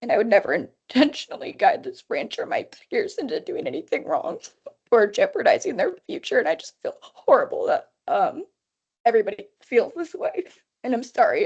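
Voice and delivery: crying through the words, tearful and wavering. Speaker addressing the branch over public meetings law, crying. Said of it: "I didn't mean to cry".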